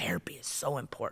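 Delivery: soft, unvoiced whisper.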